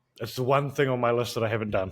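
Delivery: plain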